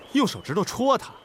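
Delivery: ordinary delivery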